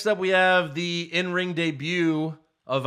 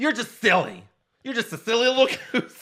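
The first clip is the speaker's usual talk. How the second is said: high, mocking, played-up nerdy voice; 7 semitones higher than usual. Retelling how a wrestling champion talked to an interviewer: mocking nerdy AJ Styles impression. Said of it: "And he's like".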